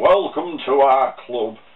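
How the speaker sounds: put-on rubbishy Sheffield accent. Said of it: "Sorry for the rubbishy Sheffield accent".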